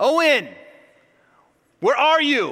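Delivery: high, swooping, worried yell. A father retelling calling for his son in a store, retelling a yell. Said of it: "I'm like really yelling in this store so loudly".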